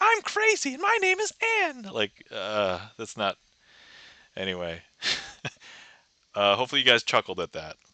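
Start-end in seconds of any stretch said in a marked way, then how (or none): 0.0-1.8 very high, squeaky put-on voice. The speaker shows how people's nickname for her might sound, in a high-pitched voice. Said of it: "I don't normally do a high pitched voice".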